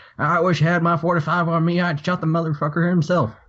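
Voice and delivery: put-on talking like an old man. Quoting a man talking in the department lounge, in a put-on old man voice. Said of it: "that was my old man voice".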